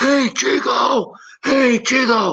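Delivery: very slow, high, drawn-out yell. Retelling someone in the crowd calling out during warm-up: imitating a fan yelling. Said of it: "I'm hearing somebody yelling".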